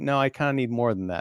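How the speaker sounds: usual speaking voice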